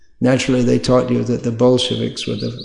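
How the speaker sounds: usual speaking voice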